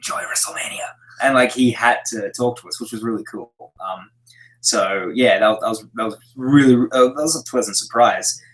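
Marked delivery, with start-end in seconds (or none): 0.0-0.9 breathy, voiceless whisper with barely any sound. Retelling what he said while he had no voice: imitating someone with no voice. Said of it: "with no voice".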